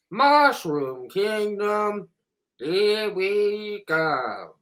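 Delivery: very slow, high, very drawn-out imitated delivery. Repeating a line from the Super Mario Brothers movie as an impersonation. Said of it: "That was my impersonation".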